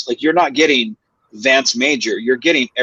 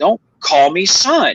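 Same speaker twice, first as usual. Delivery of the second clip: mock drawn-out, deliberate yell, slow and high-pitched; 6 semitones higher than usual. Retelling a scene where the other actor says son: retelling a yell. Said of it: "I yell at him, I'm like".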